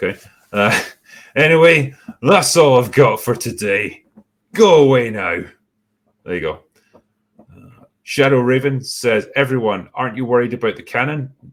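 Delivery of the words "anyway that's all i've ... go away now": loud, slurred, fake drunk-sounding voice. A listener requests a sign-off line read in a put-on drunk voice. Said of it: "in your drunk voice".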